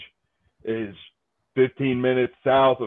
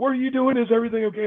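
frantic, very high, panicky, worried mother voice; 11 semitones higher than usual. Retelling a mom's worried phone call: imitating a panicking mom. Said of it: "my mom calls me up panicking".

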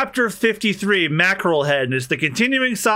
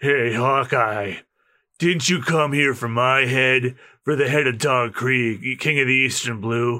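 deep, low action-hero voice; 5 semitones lower than usual. Voicing a character who calls out to Hawkeye, in a Duke Nukem voice. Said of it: "I gave him the Duke Nukem voice".

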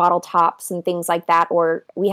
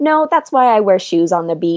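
ordinary talk

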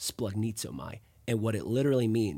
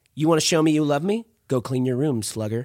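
mock guilt-tripping mom tone, higher and louder; 5 semitones higher, 10 dB louder than usual. Imitating a mom guilt-tripping a child: imitating a manipulative mom. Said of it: "I read that with a manipulative tone".

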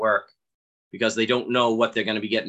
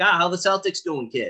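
put-on Boston accent, much higher; 8 semitones higher than usual. Retelling what people everywhere say to him, in a mock boston accent. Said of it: "they're like".

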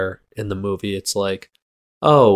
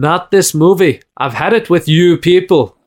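loud, high-pitched put-on Scottish accent; 8 semitones higher, 7 dB louder than usual. Speaker reacting to another person's answer of no, in a scottish accent. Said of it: "Why are you Scottish?".

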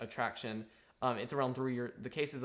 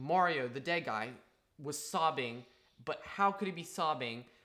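ordinary talk, nothing marked

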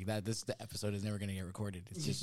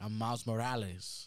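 put-on Spanish-tinged New York accent, Puerto Rican flavor. Imitating a movie character's accent for friends: Miles Morales voice. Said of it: "you can hear a little more of the Spanish too".

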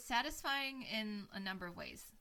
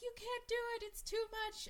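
acted-out very high shrill screaming, pleading; 13 semitones higher than usual. Recounting a film scene, act out the mother's lines imitating a screaming mother.

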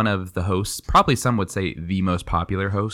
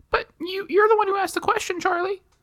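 very high, squeaky caricature voice. Playing both parts of a podcast chat, imitating Jack. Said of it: "try to do an impression of me".

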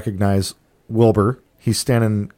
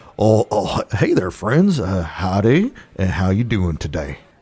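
halting, stumbling, stammering character voice, pitch swinging wide. Voicing Wilbur Earlfar greeting the three arriving friends: Wilbur Earlfar voice. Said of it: "walk up to Wilbur Earlfar, and he says".

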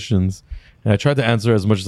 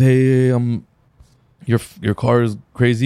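halting, slow, put-on broken-English foreign accent; 2 semitones higher than usual. Retelling a young man who came up about the car: imitating a foreign accent. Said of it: "he's saying this with an accent".

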